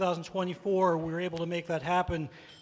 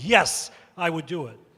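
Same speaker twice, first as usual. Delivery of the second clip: very, very loud, booming, at full volume; 7 dB louder than usual. Recalling answering a school board candidate's petition request, reenacting a very loud reply. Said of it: "I said in a very, very loud voice".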